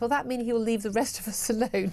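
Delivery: normal talking voice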